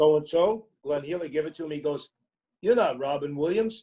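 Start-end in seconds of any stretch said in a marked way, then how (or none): 2.6-3.8 put-on thick New York accent. Retelling what a man said after asking for an autograph, in a thick New York accent. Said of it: "he had his thick New York accent".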